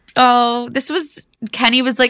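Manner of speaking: ordinary talk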